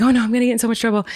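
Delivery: high, rushed, panicky and worried blurt. Retelling own words at customs: imitating own past panic. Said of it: "I start panicking and I was like".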